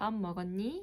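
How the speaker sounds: pitch lifting upward on last word 먹었니. Showing how Seoul people ask the everyday greeting, rising pitch on last word. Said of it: "up high pitch in the last word".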